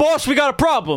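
very high, loud, bossy man's booming bellow. Voicing someone who smashes open the front door: bossy booming masculine voice. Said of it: "a bossy, masculine voice booming out".

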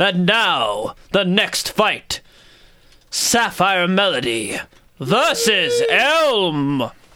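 very slow arena announcer voice, Elm stretched out. Voicing the fight announcer calling the next match: booming announcer voice. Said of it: "the announcer booms out over the pit".

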